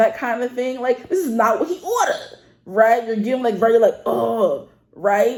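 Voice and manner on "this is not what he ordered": put-on New York accent, pitched up. Speaker demonstrates the accent New Yorkers have in TV shows: fake New York accent. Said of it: "the fake accent that the New Yorkers are supposed to have".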